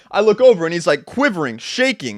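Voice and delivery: normal talking voice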